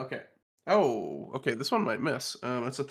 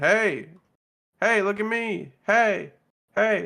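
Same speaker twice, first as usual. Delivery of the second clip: loud, drawn-out, high-pitched yell; 8 semitones higher, 8 dB louder than usual. Taunting the wizard in a tabletop game: yelling at the wizard. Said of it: "I'm gonna yell at the wizard".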